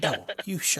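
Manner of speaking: angry, tense whispering. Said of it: "it's a whisper fight when the kids are sleeping".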